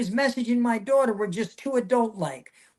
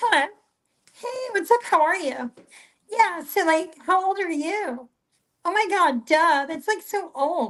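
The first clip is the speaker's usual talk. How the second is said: high, put-on young girl's voice; 7 semitones higher than usual. Speaker retells answering a man's call on their daughter's phone, in a put-on young girl voice. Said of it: "I'll pretend to be a girl".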